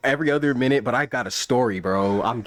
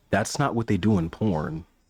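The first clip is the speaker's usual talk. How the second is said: put-on mutter under the breath, much lower; 6 semitones lower than usual. Retelling what he said under his breath, imitating him muttering under breath. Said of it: "he says under his breath".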